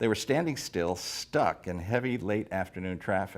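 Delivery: plain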